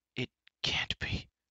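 barely voiced, hushed, breathy whisper. A companion reacts as the giant shambles toward them; whispered. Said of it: "whispered Fluter".

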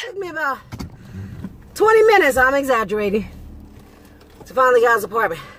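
panting, winded, out of breath. Delivery driver tells viewers about finding a customer's apartment, out of breath. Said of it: "I'm out of breath".

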